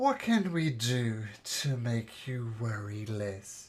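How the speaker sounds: soft, gentle, worried, concerned woman's voice. Voicing a woman speaking into the sleepers' heads: soft, concerned woman's voice. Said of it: "the woman's voice is soft and concerned".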